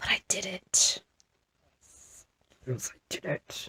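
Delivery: soft whisper under the breath. Reflecting on rushing a knitting deadline despite aching hands: whispering.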